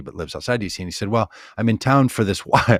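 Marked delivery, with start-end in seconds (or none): 1.1-2.8 very loud talking breaking into giggles. Retelling a conversation about a wild horses event, giggling while talking. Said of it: "I can't even say it without giggling".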